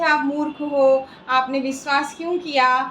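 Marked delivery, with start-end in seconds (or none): none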